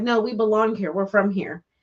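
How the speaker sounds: usual speaking voice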